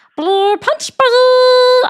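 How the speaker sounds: very high, very loud cartoon alien shriek, "ball" stretched out. Explaining voice impressions to the other speaker, the speaker gives an example: Stitch voice. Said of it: "I am making fun of Stitch".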